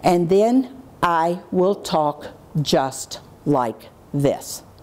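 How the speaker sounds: calm, very measured, controlled, dropped low and slow. Demonstrating how the speaker warned kids in the jail, dropped, measured voice. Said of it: "So I drop my voice, and I get very measured".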